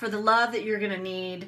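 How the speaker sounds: ordinary delivery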